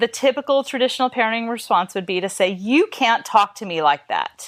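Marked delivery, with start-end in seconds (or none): 2.5-4.5 angry, reactive tone, much slower. Demonstrating a parent's typical reply to a rude child, in an angry, reactive tone. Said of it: "if I use an angry, reactive tone of voice".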